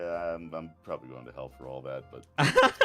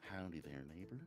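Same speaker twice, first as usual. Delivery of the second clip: put-on kindly tv host voice; 20 dB quieter than usual. Retelling voicing an evil game character as Mister Rogers: Mister Rogers voice. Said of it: "I would do Mister Rogers and be like".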